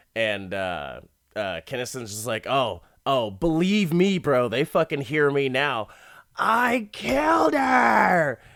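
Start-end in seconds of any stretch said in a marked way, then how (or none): 2.5-8.4 put-on all-out comic scream, "her" stretched, rising, swooping. Retelling a scene where Sam Kinison screams a confession: imitating Sam Kinison screaming. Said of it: "Kinnison starts screaming his confession".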